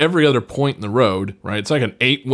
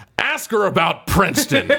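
mock yell, pitched-up and abrupt; 8 semitones higher than usual. Retelling a movie scene where someone yells at a woman: imitating someone yelling. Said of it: "yells at this woman".

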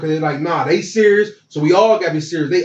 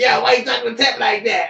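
high voice, talking through laughter; 6 semitones higher than usual. Retelling a teammate cracking up after practice: imitating someone laughing while talking. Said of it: "I can hear Sam cracking up".

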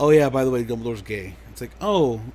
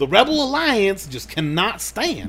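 high-pitched put-on Southern accent; 6 semitones higher, 3 dB louder than usual. Continuing the Star Wars stormtrooper bit as Clayton Bigsby, in a Clayton Bigsby accent. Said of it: "pretty good impression of that".

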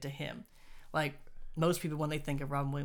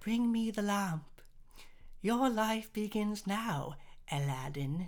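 effete, entitled, unmenacing, pitched-up privileged little voice; 6 semitones higher than usual. Mocking a character in the movie, quoting his line in a privileged little schmuck voice. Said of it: "He just sounds like this privileged little schmuck".

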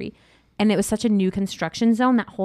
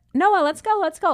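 mock yelling, very high, friendly, not mean; 9 semitones higher than usual. The speaker retells calling noah from another room, retelling a yell, not mean. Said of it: "Like I was yelling, but not mean".

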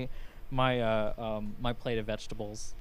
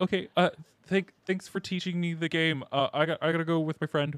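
shy, hesitant large-creature voice, much higher pitch; 5 semitones higher than usual. Leaving the card game to go with a friend, in shy large-creature voice. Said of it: "It's a little comical to see someone like so large and intimidating. Oh, his little ears are kind of flattened".

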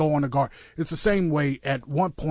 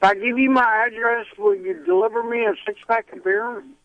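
put-on drunk slurring voice, much higher; 9 semitones higher than usual. A host plays a pretend caller on his own show, fake drunk caller voice. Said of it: "you sound drunk already".

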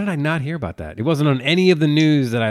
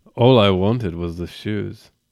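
creepy, deep-voiced delivery; 6 semitones lower than usual. Performing a bit, the speaker answers as a character in a deep creepy voice. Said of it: "if you had that uh that deep voice".

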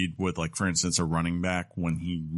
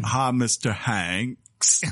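put-on, laid-on Southern Mississippi accent; 4 semitones higher, 3 dB louder than usual. Retelling how the child actor who played Forrest talked, imitating a Mississippi accent. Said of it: "Said like he's from Mississippi".

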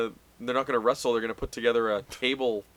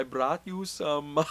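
put-on, unconvincing Swiss accent; 3 semitones higher, 4 dB quieter than usual. A character offering something to another: fake Swiss accent. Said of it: "What kind of accent is that?".

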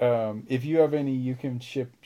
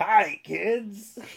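pitched-up, cartoon-style voice; 8 semitones higher than usual. Joking about cartoons, the speaker greets the kids: Krusty voice. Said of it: "Can you do Krusty laugh?".

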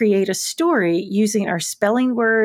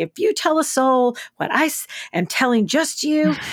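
mock stern, theatrical, menacing pronouncement; 3 semitones higher than usual. Recalling a woman who would threaten you, imitating her big booming voice. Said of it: "threaten you with this big, booming, loud voice".

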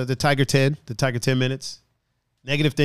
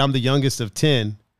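usual speaking voice

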